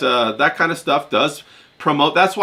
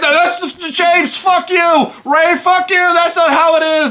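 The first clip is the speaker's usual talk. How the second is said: mock heated ranting yell, very high, shrill, loud; 5 dB louder than usual. Imagining someone yelling at his phone while driving: imitating John yelling. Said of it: "he's yelling at his phone right now".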